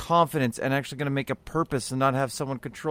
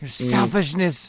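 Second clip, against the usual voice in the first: fake indignant activist voice. Mocking a speech about ecosystems dying: Greta Thunberg impression. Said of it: "every time I hear Greta's voice".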